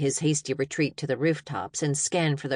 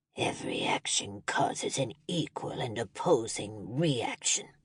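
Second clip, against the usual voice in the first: breathy, half-whispered, growled villain voice; 5 semitones lower, 7 dB quieter than usual. Narrator reading a standoff, a character answering two enemies: growled imitation of movie character. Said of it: "he growled the last statement to imitate the movie character".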